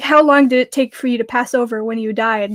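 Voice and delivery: ordinary talk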